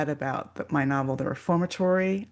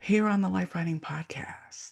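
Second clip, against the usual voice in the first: extremely mellow, smooth radio announcer voice; 3 semitones higher than usual. Podcast host introducing the show, in a mellow NPR broadcaster voice. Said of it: "are we being extremely mellow?".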